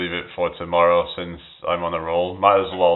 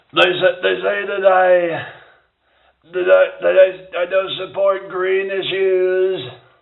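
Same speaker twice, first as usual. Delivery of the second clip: very high put-on voice, pushed way up, stammering; 13 semitones higher, 4 dB louder than usual. Doing a comedy bit about loving golf: Donald Trump voice. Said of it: "if I'm doing my Trump voice".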